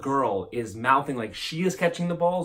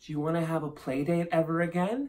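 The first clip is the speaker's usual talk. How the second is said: put-on small ten-year-old child's half-whisper; 3 semitones higher, 4 dB quieter than usual. Retelling half-whispering in a friend's ear at age ten, retelling a little-kid half-whisper. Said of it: "I would whisper right in their ear, my little 10-year-old voice".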